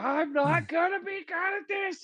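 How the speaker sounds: high, blubbering, tearful, whiny crying. Acting out a character's temper tantrum in a game: whining and crying. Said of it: "just whining and crying and be like".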